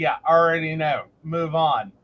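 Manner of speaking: ordinary delivery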